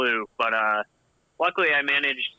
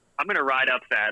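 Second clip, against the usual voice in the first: sarcastic, half-hearted, unconfident boastful tone. Retelling what was said at a group ride: imitating own sarcastic remark. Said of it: "I kinda said it sarcastically, like, not much confidence".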